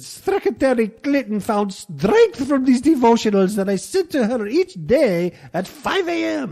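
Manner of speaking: put-on Irish accent. Quoting the man who sent Clinton devotionals, in an Irish accent. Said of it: "That's my Irish accent".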